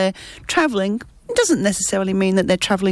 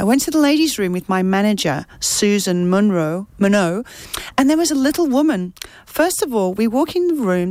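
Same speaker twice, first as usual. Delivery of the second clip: plain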